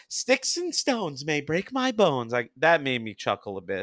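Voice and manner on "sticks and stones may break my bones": high-pitched, cartoonish cop voice. Quoting a cop from a scene that made him chuckle, in a high Mel Blanc voice. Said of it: "cop that more high Mel Blanc voice like".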